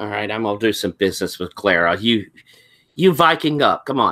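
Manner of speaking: muttered out of the corner of the mouth. Speaking in character during a match, aside to a partner: muttered out of the corner of the mouth. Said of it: "I'll say out of the corner of my mouth".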